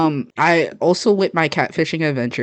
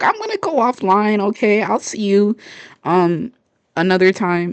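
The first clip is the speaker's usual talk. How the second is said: put-on anxious, stressed-out kid voice; 7 semitones higher than usual. Retelling what they told a stranger online as a kid: imitating own stressed kid self. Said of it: "kid me being all stressed out".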